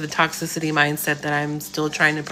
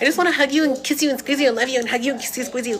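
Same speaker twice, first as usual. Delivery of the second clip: put-on high little kid voice; 9 semitones higher than usual. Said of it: "my son's like Elmiro".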